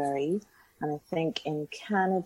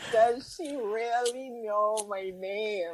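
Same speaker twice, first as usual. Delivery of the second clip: mock screaming; 6 semitones higher than usual. Recalling reacting to a quote about herself, retelling a scream. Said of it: "screaming like".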